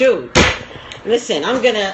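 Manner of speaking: ordinary delivery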